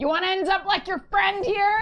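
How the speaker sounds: shrill, very loud, high shout at full volume. Shouting ahead to a guy down the alley in character: in-character shout. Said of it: "I'm gonna shout ahead to this guy".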